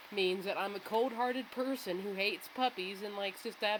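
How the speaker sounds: ordinary delivery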